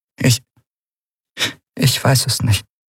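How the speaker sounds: almost inaudible voice. Narrator reads a woman's answer to a man's demand that she look at him, barely audible. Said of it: "Ihre Stimme war kaum zu hören".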